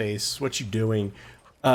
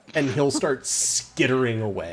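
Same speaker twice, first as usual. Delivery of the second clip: ordinary talk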